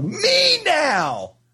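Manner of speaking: put-on very high, demanding little-kid toddler shout. Imitating a two-year-old boy nobody was paying attention to, retelling a toddler's yell. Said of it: "stomped his foot and like folded his arms across his chest and yelled".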